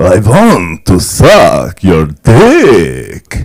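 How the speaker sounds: very slow, drawn-out, loud vampire voice with big swoops.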